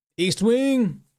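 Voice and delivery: excited, high, loud announcing shout.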